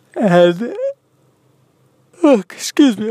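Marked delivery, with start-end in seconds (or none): 2.3-3.1 high voice, yawning through the words. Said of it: "I'm yawning".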